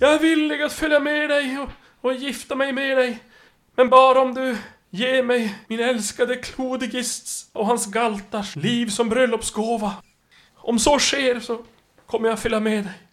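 desperate, pleading troll woman voice.

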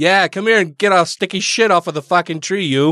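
put-on local New England accent. Joking that Vermont is in New England, in a put-on New England accent. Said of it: "so they're all talking like this".

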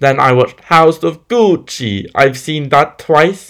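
exaggerated movie Italian accent. Talking about films she watched, in the over-the-top House of Gucci Italian accent. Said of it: "I'm doing it in the over-the-top Italian accent".

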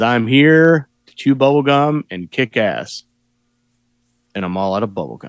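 real calm, even delivery. Showing how Piper delivers the famous movie line: calm Roddy Piper impression. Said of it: "that's basically just how he says it, like, real calm like that".

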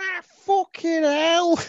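put-on very high, squeaky kid accent. Repeating a line from a watched clip, imitating the kid's accent. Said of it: "it's the accent that does it".

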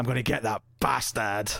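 put-on English accent. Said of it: "she's got her stupid English accent".

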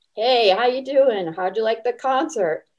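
put-on southern drawl. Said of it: "majestic Southern drawl that he has".

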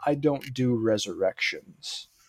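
slow, defined drawl. Quoting a line from an interview: Nicholas Meyer drawl. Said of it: "In that very, like, defined kind of drawl that he has".

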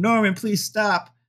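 high, screaming, pleading voice. Retelling a car chase scene where the family begs norman: imitating someone screaming. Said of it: "family screaming".

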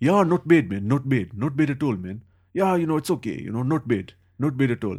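put-on Gujarati accent with a slight English tinge. Joking about old Gujarati men the speaker knows, imitating their English-tinged accent. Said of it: "they talk with like a bit of an English accent".

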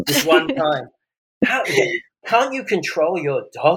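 sarcastic, mock-indignant scolding tone. Joking after another speaker's dog barks mid-call: sarcastic mock scolding. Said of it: "obviously I'm being sarcastic there".

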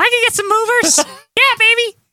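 very high, squeaky comic character voice. Imitating Jimmy Hart talking up the shark cage: Curly Howard voice. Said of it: "You're turning into Curly Howard with that impression".

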